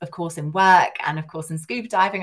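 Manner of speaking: plain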